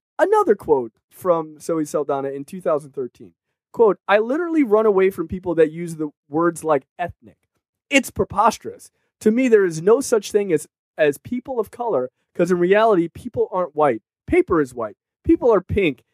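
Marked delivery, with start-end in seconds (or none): none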